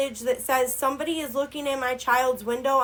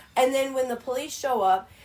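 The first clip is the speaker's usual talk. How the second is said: ordinary talk, nothing marked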